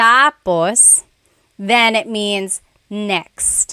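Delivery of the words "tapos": tapos with stress on first syllable ta-. Explaining how stress changes a word's meaning, saying tapos with stress on first syllable. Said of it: "When the emphasis is on the first syllable".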